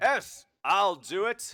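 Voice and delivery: very loud, very slow, regal booming voice. A crowned figure among the guards volunteers: loud booming voice. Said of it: "a loud booming voice".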